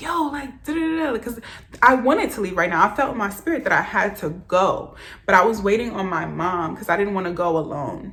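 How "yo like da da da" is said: mock thrilled scream, high and excited. Retelling screaming on the phone to a friend, wanting to leave right now, retelling a scream. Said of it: "I'm like screaming".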